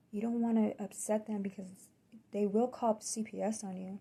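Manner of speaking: quiet whispering. Retelling what your attending nurse said to you after they left, retelling a whisper. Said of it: "she whispers to me".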